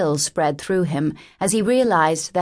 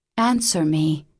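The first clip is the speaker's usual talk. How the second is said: whispered, hushed; 3 semitones lower than usual. A woman speaks to a man who may be leaving, whispering. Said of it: "she whispered".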